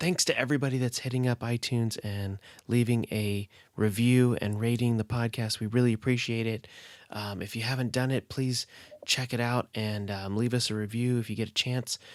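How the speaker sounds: soft, hushed, near-whispering voice. Podcast host recording late while his kids sleep, thanking listeners: speaking quietly. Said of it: "I'm speaking a little quietly".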